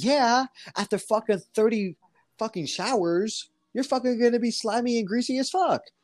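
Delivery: crude, high-pitched voice. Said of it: "someone said".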